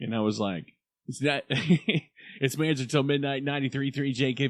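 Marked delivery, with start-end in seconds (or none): 1.1-4.5 radio dj announcer voice, on-air style. Retelling their first air check tape in radio: imitating own old radio DJ voice. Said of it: "'Cause when I was in radio".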